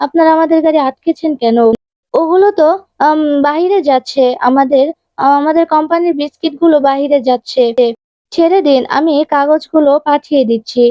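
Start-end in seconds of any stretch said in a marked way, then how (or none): none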